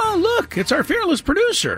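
very high, swooping showpiece falsetto. Quoting a throwaway line from the show's introduction, in a falsetto Miss Piggy voice. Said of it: "the falsetto voice of somebody there going".

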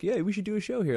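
half-joking, very high-pitched tone. Retelling chatting with the staff after shows, the comedian answers them: retelling a joking offer. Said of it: "like kind of jokingly".

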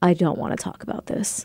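put-on flat deadpan. Recalling a man who didn't want to discuss his skin cancer, imitating a deadpan man. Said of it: "he was so deadpan and so like".

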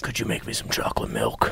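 whispered, breathy movie-killer voice. Trying out a funny voice while drinks are being ordered, in a Jigsaw-like voice. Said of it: "It kind of sounds like Jigsaw from the movies".

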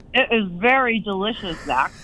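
muffled speech through a full mouth, mid-chew. Asked how the food is, answering while talking with mouth full. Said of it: "with my mouth full".

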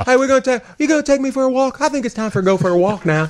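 very high chirpy dog voice with a southern lilt. Voicing the dog, who wants to go for a walk, in a Minnie Pearl southern dog voice. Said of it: "She's got a southern accent".

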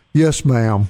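acted sheepish manner. Retelling a kid's reply to a woman's warning: imitating a sheepish reply. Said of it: "he looks at her real sheepishly and goes".

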